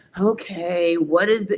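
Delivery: mock worn-out, weary, exhausted tone. Describing how the people who get the call answer: imitating an exhausted tone. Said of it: "they already have like this exhaustive tone".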